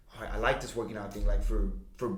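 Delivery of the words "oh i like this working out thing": ordinary delivery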